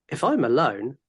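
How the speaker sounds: ordinary talk, nothing marked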